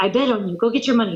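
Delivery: put-on thick Brazilian accent. Retelling the coach explaining the bet: imitating a thick Brazilian accent. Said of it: "he has a really thick Brazilian accent".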